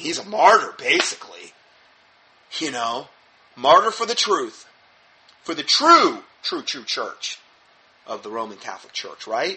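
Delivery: scornful, mocking, sarcastic tone. Interpreting an article's claim for the listeners: sarcastic. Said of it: "Rather sarcastically".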